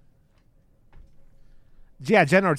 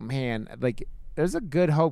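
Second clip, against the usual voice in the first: plain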